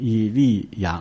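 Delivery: 以利亚 spelled out slowly, each syllable stretched.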